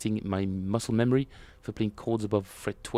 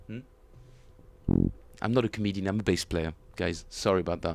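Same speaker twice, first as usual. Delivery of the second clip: usual speaking voice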